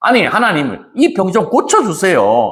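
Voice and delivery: indignant, demanding, protesting tone.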